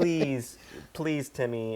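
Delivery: put-on affectionate tone. Showing how a line was meant to be played: imitating a loving plea. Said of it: "a more loving".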